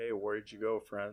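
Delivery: plain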